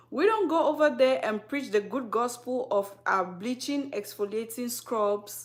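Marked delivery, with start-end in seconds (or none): none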